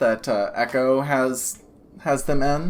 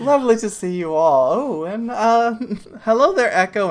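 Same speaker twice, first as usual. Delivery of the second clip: put-on elderly grandmother voice, higher and louder; 9 semitones higher, 4 dB louder than usual. Voicing an older woman greeting the party: grandmotherly older woman voice.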